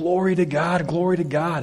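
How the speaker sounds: light, unhurried put-on female calling out. Retelling a story of a woman's morning cry: imitating a woman shouting. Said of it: "she shouts out".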